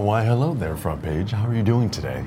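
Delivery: low, soft, formal suit-and-tie business voice. Asked about their business voice, the speaker greets the front page again in business voice. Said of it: "Business voice?".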